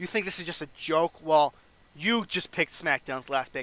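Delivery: ordinary delivery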